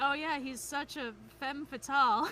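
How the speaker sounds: ordinary talk, nothing marked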